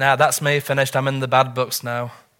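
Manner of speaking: ordinary talk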